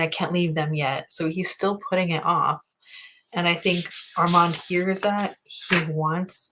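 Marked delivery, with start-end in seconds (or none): none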